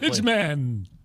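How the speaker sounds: dramatic comic-book superhero announcer voice. Naming a made-up superhero for an ad: superhero announcer voice. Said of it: "Do that voice again".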